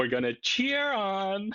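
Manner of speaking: very high, slow, drawn-out, flamboyant camp lilt. Mocking a clip of a speech with a camp Trump impression. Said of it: "his best sort of camp impression, where he's like".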